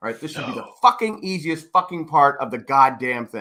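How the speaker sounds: mock fed-up, angry, frustrated cursing outburst. Retelling trying to fix a light fixture: retelling an angry frustrated outburst. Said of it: "I'm getting angry and frustrated because I go".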